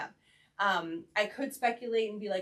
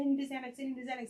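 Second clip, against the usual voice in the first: frantic, panicked voice, words said twice; 4 semitones higher than usual. Retelling a bride's plea during an anxiety attack: imitating someone panicking. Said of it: "panicking, panicking".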